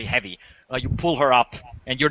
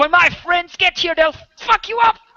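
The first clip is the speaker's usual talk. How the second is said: very high, loud, panicked delivery; 6 dB louder than usual. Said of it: "starts slashing, uh, the air".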